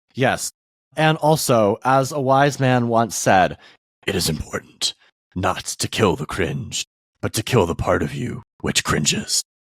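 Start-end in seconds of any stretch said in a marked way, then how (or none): 4.0-9.4 very low, gruff growl, dropped way down. Quoting something a wise man once said to a co-host: Batman voice. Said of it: "that was the Batman voice".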